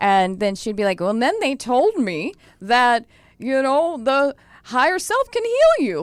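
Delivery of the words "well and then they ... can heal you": high, awed, marvelling voice with swooping pitch. Imitating Dolores Cannon marveling at her own material: Dolores Cannon impression. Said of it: "That's a pretty good impression".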